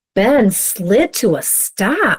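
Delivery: reading aloud, full of surprise. Modeling for students how to read a sentence with emotion, sounding surprised. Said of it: "read it like we're surprised".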